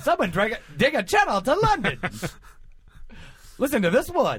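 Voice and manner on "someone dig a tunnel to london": put-on old-timey 1920s newsboy voice. Voicing an imagined line in the speaker's head, 1920s newsie voice. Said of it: "sound like a newsie from the 20s".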